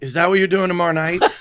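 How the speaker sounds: put-on dead serious, grave delivery. Retelling what someone asked right after a set: imitating Jimmy Cano, dead serious. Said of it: "dead serious".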